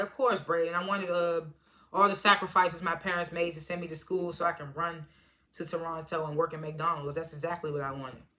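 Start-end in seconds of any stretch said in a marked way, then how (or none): none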